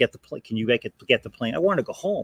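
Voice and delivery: mock demanding half-shout, mild and held back. Retelling arriving in a wheelchair during a layover, imitating own yelling. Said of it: "just started yelling, like".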